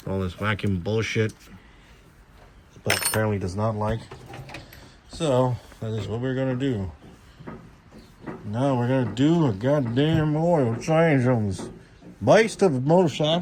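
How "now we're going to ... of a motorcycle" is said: put-on, slow, drawled country-boy accent. Announcing an oil change on the motorcycle, in a country voice. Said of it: "don't mean to use the country voice".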